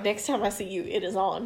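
ordinary talk, nothing marked

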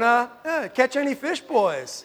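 high-pitched, sarcastic, needling New York manner.

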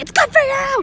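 high loud insistent voice.

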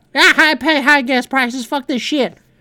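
high-pitched, fake put-on Southern accent. Voicing how district voters see the Democrats, in a put-on southern accent. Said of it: "Why am I doing a southern accent".

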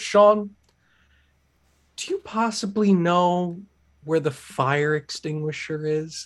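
acted-out, ever so courteous, careful, super polite tone. Retelling how a woman turned and asked him something, imitating someone super polite. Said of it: "she's super polite ... that was the tone".

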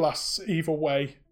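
plain

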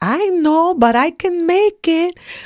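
put-on high, slow, very drawn-out Greek accent. Retelling an argument with Mom over store-bought clothes, in Mom's Greek accent. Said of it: "she had a Greek accent".

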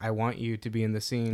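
ordinary talk

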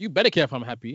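put-out, aggrieved, disgruntled tone. Insisting another speaker care about their happiness, disgruntled girlfriend tone. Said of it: "don't sound like a disgruntled girlfriend".

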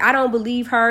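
ordinary talk

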